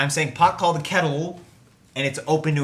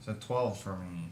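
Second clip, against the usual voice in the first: very low, very soft, sad, dejected murmur; 8 semitones lower, 14 dB quieter than usual. Announcing a low dice roll to the group, sounding sad. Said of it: "You sound so sad".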